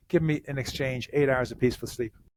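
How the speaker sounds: ordinary talk, nothing marked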